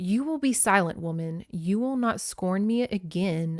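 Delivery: mock wooden, stiff, unnatural, stilted delivery. Retelling what a husband said after a lunge, imitating a stilted voice. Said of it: "said in this sort of stilted voice".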